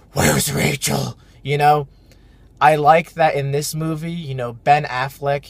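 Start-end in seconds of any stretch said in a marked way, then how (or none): 0.2-1.2 rough, creaky caped-hero voice. Complaining about Batman's voice in the Dark Knight movies, doing the Dark Knight Batman voice. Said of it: "Batman is a grown ass man and he talks like this".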